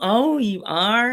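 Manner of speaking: snide, disbelieving tone. Retelling how a sister mocks them: imitating sister Sassy. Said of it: "she'll go".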